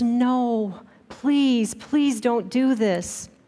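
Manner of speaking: put-on child's begging plea, drawn-out "no". Telling a story, the speaker voices a boy begging his parents: retelling a child's begging. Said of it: "He begged his parents".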